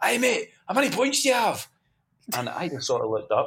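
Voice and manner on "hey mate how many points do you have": very high put-on holler, as if from afar. Retelling how someone called across a car park: imitating James shouting across. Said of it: "he shouts across the car park".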